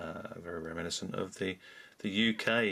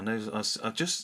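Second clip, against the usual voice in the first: plain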